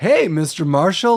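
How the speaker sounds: acted, mock, very polite salesman voice. Describing a salesman's reaction to a customer shooting a crossbow: imitating a very polite salesman. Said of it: "like very polite".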